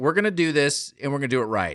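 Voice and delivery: plain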